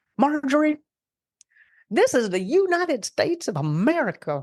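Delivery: put-on classic Texan accent, laid on, high-pitched. Recalling their sister-in-law, a classic Texan, the speaker is imitating a Texan accent. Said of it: "I'm gonna try and do my best I can with her accent".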